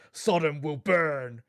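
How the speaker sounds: booming, very loud, dramatic, theatrical battle cry. Describing a game character's combat call-out, imitating his dramatic battle shout. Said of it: "dramatic voice call out thing in combat where he just sort of shouts".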